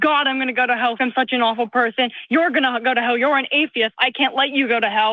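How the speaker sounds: put-on panicked voice. Retelling what someone says in a spiral: imitating someone panicking.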